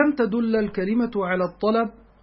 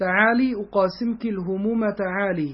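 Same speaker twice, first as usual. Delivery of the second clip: ordinary talk, nothing marked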